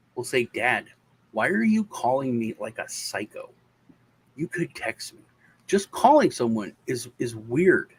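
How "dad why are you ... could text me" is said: ordinary delivery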